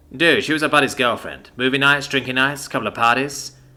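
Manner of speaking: plain reading voice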